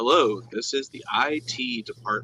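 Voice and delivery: soft, flat, machine-like robotic monotone. Retelling a phone call from an IT department caller, imitating a robotic-sounding man. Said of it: "because like he sounded so robotic".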